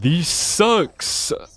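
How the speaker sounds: vampire-style voice. Speaker imagining what Dracula might say: Dracula accent. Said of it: "so that I can do an accent".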